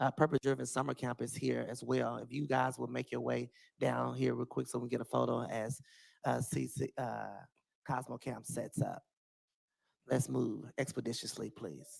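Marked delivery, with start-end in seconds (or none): 10.1-12.0 rough, creaky, pulpit-style preacher voice. Asking a camp group to come down for a photo: preacher voice. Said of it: "That's the preacher voice in me".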